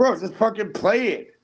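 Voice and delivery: very high, exasperated, drawn-out yell. Insisting the other speaker play the video: yelling. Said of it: "Why are you yelling?".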